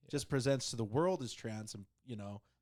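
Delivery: ordinary talk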